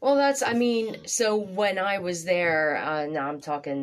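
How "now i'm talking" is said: ordinary talk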